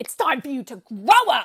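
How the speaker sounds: mock enraged, loud, furious yelling fit. Retelling a film scene where the father has an outburst: angry outburst. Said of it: "he has this fucking crash out".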